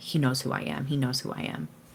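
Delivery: muttering under breath. Voicing a character who dashes to hide in a dark spot: muttering under her breath. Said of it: "Just muttering under her breath".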